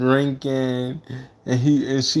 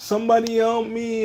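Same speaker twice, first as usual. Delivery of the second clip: mock very high, sobbing, pleading cry; 9 semitones higher than usual. Retelling a movie scene after a son is shot: imitating Michael crying. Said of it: "He was just crying like".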